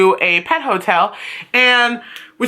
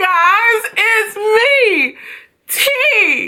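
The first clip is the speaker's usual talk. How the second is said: breaking, cracking voice, very high, slow, drawn out; 12 semitones higher than usual. Host greeting the audience at the start, voice cracking. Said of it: "My voice is cracking like I'm going through puberty".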